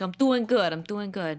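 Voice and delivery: put-on thick, heavily laid-on New York accent. Retelling how Paul Wesley greeted the speaker: imitating Paul Wesley's New York accent. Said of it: "thick New York kinda accent".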